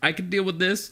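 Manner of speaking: put-on teary voice. Retelling a phone call from Jess, imitating Jess holding back tears. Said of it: "tears a little bit ... kinda fighting it back".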